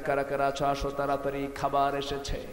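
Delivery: ordinary delivery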